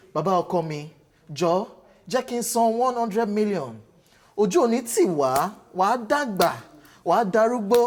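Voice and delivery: slow, deliberate speaking style, each word taken slowly. Reading a post about Messi's release clause aloud, in Fathia Balogun voice. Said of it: "So let me read it in her voice".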